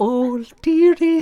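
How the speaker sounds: put-on high woman's voice. Showing the other speaker how to take the character's voice higher, Mrs. Doubtfire voice. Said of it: "Go higher up though".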